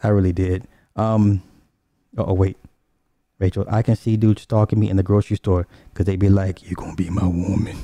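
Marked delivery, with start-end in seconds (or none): 6.7-7.8 quiet, hushed, suggestive come-on half-whisper. Retelling what men in the grocery store half-whisper: imitating a man's half-whisper. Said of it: "y'all gonna hear that whisper".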